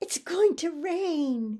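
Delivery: high, loud, slow, happy call. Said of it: "Say it happily".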